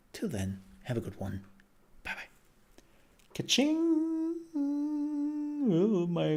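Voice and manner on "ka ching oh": much higher, cracked squeak, voice giving out. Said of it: "my voice is already gone".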